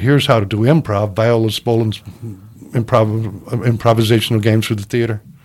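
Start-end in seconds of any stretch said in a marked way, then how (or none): none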